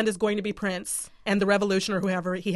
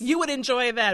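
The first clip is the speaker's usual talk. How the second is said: ordinary talk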